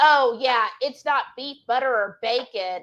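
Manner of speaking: mock snarky, snide tone. Retelling what the nutritionist said when the speaker declined a trail bar, mock-snarky tone. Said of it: "she said in a snarky tone".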